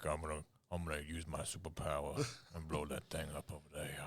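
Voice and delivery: horror-film killer voice. Imitating the game's main character, who sounds like Buffalo Bill. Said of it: "He talks like this".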